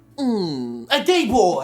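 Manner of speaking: very slow, dragged, drawn-out delivery. Retelling a classroom story, imitating the student's answer. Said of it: "what this dude sounded like".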